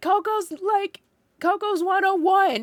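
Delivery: put-on very high, drawn-out screaming yell. Retelling yelling to dad after finding him cold: imitating own past yell. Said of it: "I yelled at my dad".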